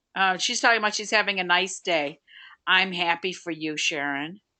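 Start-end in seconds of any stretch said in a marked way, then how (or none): 2.6-4.3 playfully sour, jokingly bitter, put-on bitterness. Host answering Sharon, who checked in having a nice day: bitter tone. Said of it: "You hear the bitterness in my voice?".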